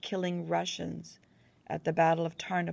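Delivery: ordinary delivery, nothing marked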